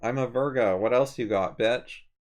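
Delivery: ordinary talk, nothing marked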